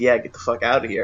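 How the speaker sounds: ordinary talk, nothing marked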